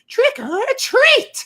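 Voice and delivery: very high, shrill, screaming witch voice. Imitating a childhood trick-or-treat bag's button phrase: screaming witch voice. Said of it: "a witch's voice, just, like, screaming that".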